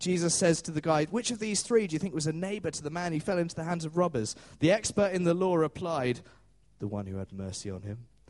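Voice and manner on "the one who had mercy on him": grudging, sulky, very low mutter. Retelling the law expert's reply to Jesus in the parable: mock-sulky voice. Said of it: "You're supposed to hear a sulky voice".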